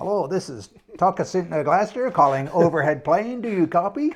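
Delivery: loud, faux fake American accent. Calling an overhead plane, in a fake american accent. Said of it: "we put on this faux American accent".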